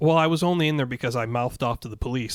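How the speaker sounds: ordinary talk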